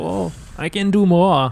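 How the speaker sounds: sudden put-on German accent. A commentator voices an overexcited player's thoughts: sudden German accent. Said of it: "all of a sudden gets a German accent".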